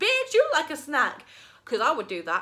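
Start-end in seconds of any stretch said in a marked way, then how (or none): 0.0-1.3 hyped-up, high and loud. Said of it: "just be like".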